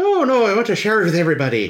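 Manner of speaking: bad Scottish accent, very high, swooping. Retelling what Hammond says about sharing the park: bad Scottish accent. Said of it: "Why is he Scotty?".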